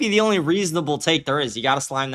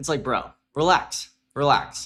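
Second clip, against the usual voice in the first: plain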